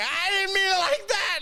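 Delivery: mock, very high-pitched, panicky protesting voice. Retelling what an older man said when caught off guard: imitating someone panicking.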